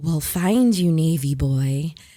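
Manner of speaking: very low, deep, eerie, menacing voice. Retelling a voice calling after them as they ran off, retelling a creepy voice. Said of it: "this like creepy voice trails after us".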